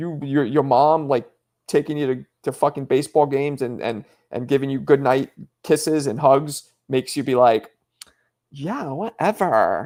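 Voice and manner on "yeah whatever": put-on dismissive Valley Girl voice with attitude. Imitating a kid's reply to his mom's hugs and kisses: imitating Valley Girl voice. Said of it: "it's like Valley Girl flavor".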